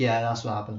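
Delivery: flat, expressionless delivery. Retelling how Mommy answered a toddler's question: imitating a deadpan reply. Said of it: "Mommy just turns around deadpan".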